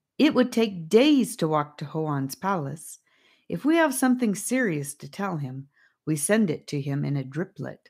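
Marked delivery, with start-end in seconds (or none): none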